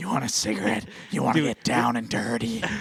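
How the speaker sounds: high-pitched cartoon voice. Joining a friend's bit about the DJ: Patty voice. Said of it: "Patty from the Marge's sister".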